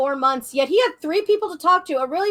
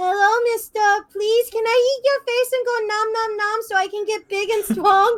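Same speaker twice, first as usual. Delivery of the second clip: sugary, cute, adorable anime character voice; 4 semitones higher than usual. Retelling how a streamer voices the monster while playing Carrion, cutesy adorable anime voice. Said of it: "doing this cutesy, adorable anime voice going".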